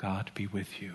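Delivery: very quiet, hushed, low tone. Retelling a pastor handing bread to churchgoers, in a hushed tone. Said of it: "in a hushed tone said".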